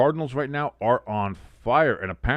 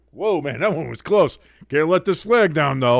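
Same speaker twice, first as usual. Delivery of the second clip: mock goofy soldier voice, higher and louder; 5 semitones higher, 5 dB louder than usual. Acting out a goofball holding a flag under cannon fire: imitating a goofball flag bearer. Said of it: "goofballs sitting there holding a flag ... being like".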